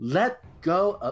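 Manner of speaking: high, loud yell in a put-on voice.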